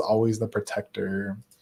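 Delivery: ordinary talk, nothing marked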